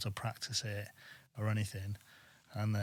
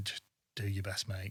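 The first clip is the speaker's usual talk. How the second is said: hushed, half-whispered stage whisper under the breath; 3 dB quieter than usual. Retelling what a presenter said during a live broadcast: imitating Matt Baker half-whispering.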